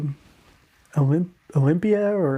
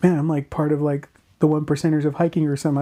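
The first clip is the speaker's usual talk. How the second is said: usual speaking voice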